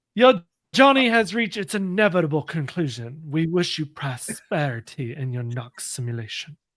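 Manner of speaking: grand, proclaiming delivery. Player reads out a game's ending message, Jumanji narrator voice. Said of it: "you sounded like the Jumanji narrator".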